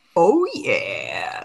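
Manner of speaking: mascot voice dropped very low. Joking with a co-host, in a Kool-Aid Man voice. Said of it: "that's my Kool Aid Man voice".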